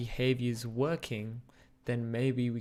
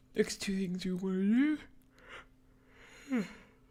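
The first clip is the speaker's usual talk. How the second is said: high voice, talking through a yawn; 8 semitones higher than usual. Speaker guiding listeners through the next steps, yawning. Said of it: "I'm still yawning".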